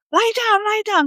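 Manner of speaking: shouting. Retelling what a man shouted at the children: imitating someone yelling. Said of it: "this guy yells".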